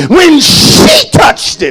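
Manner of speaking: heavy stress on the word she. Sermon, showing where the emphasis goes in the line: strong stress on 'she'. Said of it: "You got to put that emphasis on that she".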